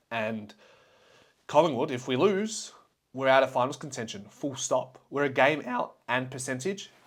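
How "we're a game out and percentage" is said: voice cracking and breaking. Talking about Collingwood's upcoming must-win game, your voice cracking. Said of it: "the voice crack there".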